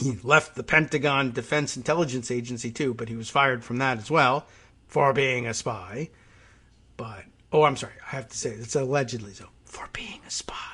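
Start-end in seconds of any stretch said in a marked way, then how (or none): 8.5-10.5 hushed whisper under the breath. Adding a quick hedge mid-sentence as a joke: whispering. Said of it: "I'm whispering that".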